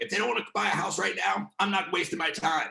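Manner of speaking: put-on New Jersey accent. Quoting what other agents would say, Jersey accent. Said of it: "I'm doing my like Jersey accent".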